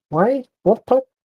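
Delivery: very high, baffled, confused creature voice. Voicing a creature poked by an unseen hand: confused creature voice. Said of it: "It looks around, confused".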